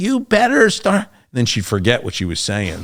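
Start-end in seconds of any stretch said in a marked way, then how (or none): 0.0-1.0 very high, shrill, barking yell. Retelling how a woman at the academy yelled at the class: imitating someone yelling. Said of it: "She starts yelling at us".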